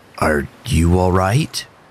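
caring, concerned tone. Narrator reading a man asking a frightened woman a question, concerned. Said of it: "words laced with concern".

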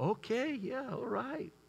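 play-acted hushed, gentle, loving, soft, slow, sweet tone. Retelling how she answered his toothpaste request, mimicking a sweet, loving reply. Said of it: "Real loving, kind, sweet".

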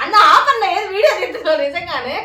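high, loud, laughing delivery.

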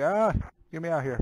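desperate, pleading cry. Voicing a character's face trying to escape his head: voicing a face trying to escape. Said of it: "his face is trying to escape his head".

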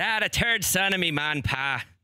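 game put-on Irish accent, high and loud. Trying an irish accent when asked: put-on irish accent. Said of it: "for Irish, that's very good".

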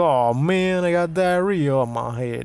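put-on slow, spoiled bratty kid voice. Acting out a bratty movie kid with diarrhea dumped on him: bratty kid voice. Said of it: "a really shitty kid, and he's like".

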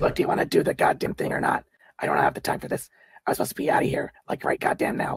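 rasping, raspy, menacing, impatient voice. A game master voices a woman holding someone in a knife hold, rasping:. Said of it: "She rasps out".

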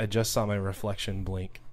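plain

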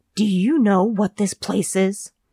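forced out in a hiss. Naomi, beyond listening, answers Brittany at the back of the store, hissed. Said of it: "hissed Naomi".

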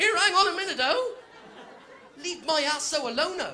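mock high, indignant, put-out tone. Retelling protesting at a bloke in a bar: retelling own indignant protest. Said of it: "I went".

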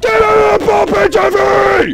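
loud, high-pitched shouting.

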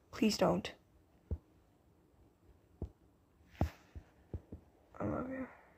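soft, quiet whispering. Voicing the partner in an imagined scene, whispering in the listener's ear: whispering. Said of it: "If you couldn't hear what I said, he was basically whispering".

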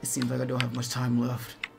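quiet muttering in character voice. Describing a scene where Greymon's arms glitch, voicing him; Greymon muttering under his breath. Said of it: "under his breath".

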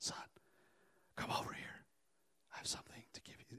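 breathy, hushed, very quiet whisper. Retelling a father calling his son from across the room, imitating a whisper. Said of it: "how come you're whispering to me?".

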